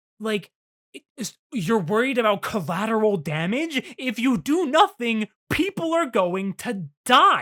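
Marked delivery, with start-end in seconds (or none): 1.5-7.4 play-acted high, loud, drawn-out screamed yell. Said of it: "screaming at him like".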